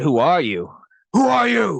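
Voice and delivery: slow, growling delivery. Retelling an actor's line in a movie, Batman growl. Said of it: "Just the growl".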